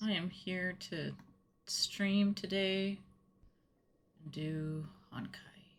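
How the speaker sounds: sleepy, drowsy-sounding voice. Streamer opening today's stream just after switching it on, in a sleepy voice. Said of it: "I sound sleepy".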